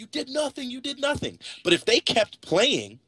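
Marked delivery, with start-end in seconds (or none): 0.0-1.4 very high, shrill, furious yelling scream. Speaker describing Nameless yelling at the ref during a tournament, imitating Nameless yelling. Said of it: "screaming and yelling and yelling at the ref".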